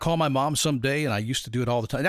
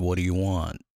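mimicked negative tone, lower pitch; 5 semitones lower than usual. Retelling asking mom to borrow money, imitating mom's negative tone. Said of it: "So negative".

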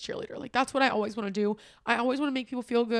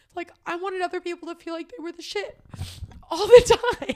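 crying through words, high and raised; 7 semitones higher, 6 dB louder than usual. Talking about a past relationship, the speaker breaks down crying. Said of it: "I'm so sorry I'm crying".

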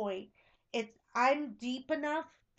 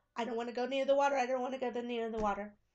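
acted-out scared, frightened, trembling voice. Retelling own childhood fear of the water: imitating own trembling fear. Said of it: "I was trembling on the beach".

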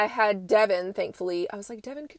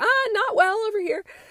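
mock dry sarcastic remark, pitched very high; 12 semitones higher than usual. Recounting their reply about tree limbs all over the cove: retelling own sarcastic remark. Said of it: "I think I just sarcastically was like".

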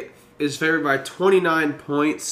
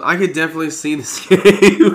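loud, breaking up laughing mid-line; 6 dB louder than usual. Giving a game pick and cracking up mid-sentence: laughing while talking. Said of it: "I almost went through that without laughing".

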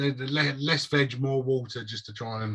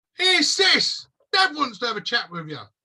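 very high, loud, swooping shout; 12 semitones higher, 6 dB louder than usual. Voicing Bill calling to his sister in the story, shouting. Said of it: "suddenly hear Bill shout".

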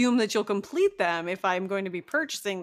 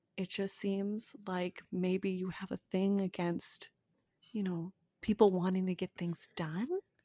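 lowered, much quieter voice; 8 dB quieter than usual. Told not to yell, speaker keeps talking to the other person in a lowered voice. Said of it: "I'll bring it down even lower".

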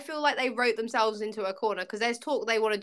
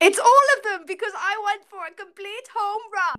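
put-on German accent, pitched way up and loud; 10 semitones higher, 7 dB louder than usual. Taking over the good, bad or weird segment: put-on german accent. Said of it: "I don't know what the accent's about".

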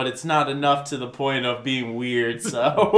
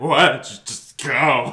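put-on, repulsed, totally disgusted dismissive tone. Retelling a scene where a woman turns over, mock-disgusted. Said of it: "totally disgusted".

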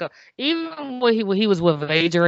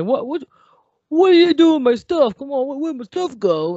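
loud, pitched-up yell; 9 semitones higher, 4 dB louder than usual. Speaker recounts how he started yelling at someone, retelling a yell. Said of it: "he started yelling at like".

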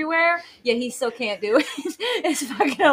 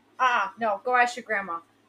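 offhand, distracted, dismissive brush-off tone; 3 semitones lower, 6 dB quieter than usual. Retelling how dad answered from bed behind his phone: imitating dad brushing her off. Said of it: "this is what he does".

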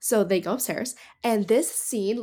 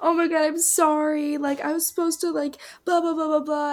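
crying, tearful voice, higher; 7 semitones higher than usual. Retelling a film scene where a character starts crying and apologizes: imitating someone crying. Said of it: "he starts crying. He's like".

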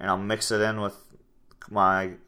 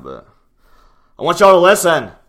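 very loud, high-pitched, swooping yell; 8 semitones higher, 12 dB louder than usual. Speaker telling the audience they want them to listen: yelling. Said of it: "I know I'm yelling in y'all's face or ear right now".

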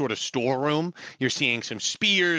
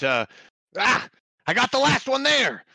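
crying out, much higher pitch; 10 semitones higher, 4 dB louder than usual. A game master voices one of the fighters in a battle, crying out. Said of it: "one cries out".

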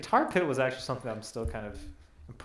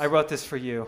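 ordinary talk

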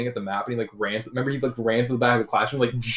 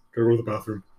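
put-on very deep male voice. Imitating him asking the teacher to go to the bathroom: imitating a very deep voice. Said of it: "His voice was deep as fuck".

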